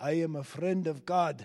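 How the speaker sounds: put-on Ugandan-accented speech. Retelling what a little boy from a Ugandan orphan choir said: Ugandan accent. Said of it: "with his Ugandan accent".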